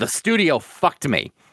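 ordinary delivery

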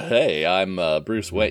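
smarmy playboy voice, low, deep and slow. Talking about that voice, a speaker gets back into character: Bruce Wayne voice. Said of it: "Let me see if I can get back into character".

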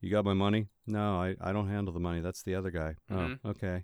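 mock low-energy flat delivery. Criticizing a show's voice acting by acting out the scene, in a mock low-energy line reading. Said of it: "was real low energy".

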